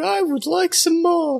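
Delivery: put-on convincing small British boy voice. Performing a voice right after another speaker calls it convincing: small British boy voice. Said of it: "A very convincing small British boy".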